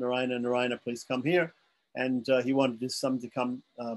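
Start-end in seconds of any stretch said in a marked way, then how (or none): none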